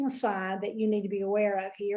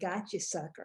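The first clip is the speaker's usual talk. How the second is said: quiet mutter under breath, lower and quieter; 5 semitones lower, 9 dB quieter than usual. Retelling words said after someone walked off: muttering under breath. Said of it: "under my breath".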